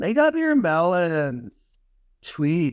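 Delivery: swooping, sing-song voice with pitch swinging all over. Quoting lines the way they were said in a movie, Pauly Shore impression. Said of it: "I will say some quotes the way they were said in the movie".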